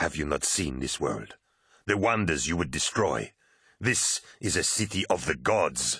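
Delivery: ordinary delivery, nothing marked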